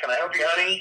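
put-on New York accent with a drawl. Quoting a lady who walked up to you in a sports store, new york drawl. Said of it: "that sort of New York drawl".

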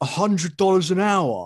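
stronger British accent. Retelling a surprising article, stronger British accent. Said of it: "You intensify your British accent".

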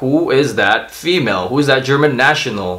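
ordinary talk, nothing marked

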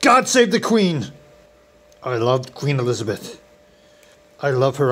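sexy, fake South African accent, played sultry. In a comedy video about making British tea, speaking in a sexy fake South African accent. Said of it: "in my sexy South African fake voice".

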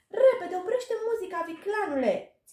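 very high, piercing, shrill scream. Reading a character's cry as his feet start dancing on their own, screaming. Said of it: "Țipă Gobo".

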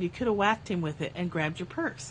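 ordinary talk

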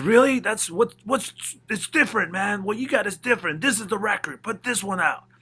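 loud, high-pitched, excited mimicry.

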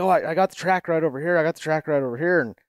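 mock, loud hollering, calling out. Retelling a buddy calling out about a track: imitating a friend hollering. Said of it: "he hollers, he's like".

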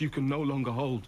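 ordinary delivery

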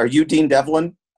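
put-on speaking with Serbian accent. Retelling a girl approaching the table in a cafe: thick Serbian accent. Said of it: "in a thick Serbian accent asked me".

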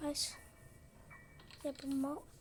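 frightened voice. Streamer playing Granny, telling viewers the game frightens them, scared. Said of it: "çok korkuyorum".

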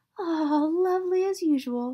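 slow, lingering, high-pitched purring delivery. A girl rips open her class picture from the teacher, purring. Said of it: "she purred".

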